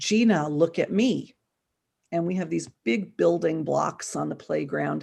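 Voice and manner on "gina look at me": slow, really manly put-on macho voice. Retelling a child calling out to her on the playground, really manly voice. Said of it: "in a really manly voice".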